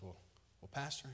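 hushed quiet voice. Telling a joke, a man leans over to the pastor: imitating someone speaking quietly. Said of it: "he leans over to the pastor real quiet".

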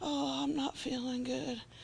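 put-on very soft, slow, low, groggy sleepy croak. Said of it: "all kind of groggy and low".

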